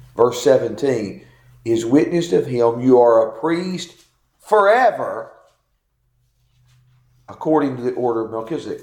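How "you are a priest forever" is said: stress placed on the word forever. Reading a verse aloud to show what it quotes: stress on forever. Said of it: "I think you could read this like this. ... Why do I stress that word?".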